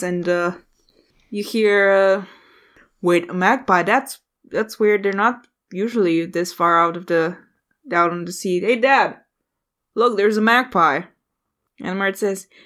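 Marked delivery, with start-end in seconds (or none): none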